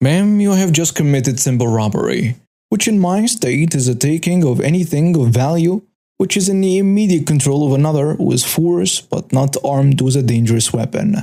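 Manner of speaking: plain reading voice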